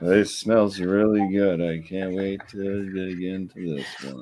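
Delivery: mocking, put-on flat monotone delivery. Teasing another speaker by repeating his words: imitating a monotone voice. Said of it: "I'm a little monotone today".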